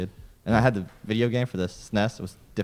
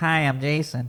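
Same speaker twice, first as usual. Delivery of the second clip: put-on pinched-nose voice, higher pitch; 7 semitones higher, 3 dB louder than usual. Doing a quick impression of a co-host by holding the nose: imitating a friend with nose held. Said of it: "You just close your nose".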